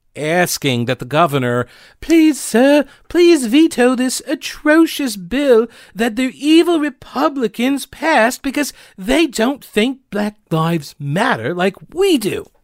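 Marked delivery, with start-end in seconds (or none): 2.0-12.4 very high pitched fake British accent. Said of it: "I know I was kind of slipping into different British accents there".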